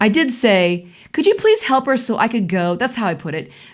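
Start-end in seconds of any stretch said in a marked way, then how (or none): 1.1-2.7 mock pushy, impatient, demanding under polite surface. Retelling asking a girl to help another so she could go home, in that tone. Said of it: "I said it in that in that tone".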